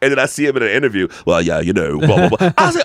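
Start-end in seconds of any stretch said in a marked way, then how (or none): 1.2-2.5 natural British speaking voice. Imitating an actor speaking in an interview: Idris Elba British accent. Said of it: "he's really British".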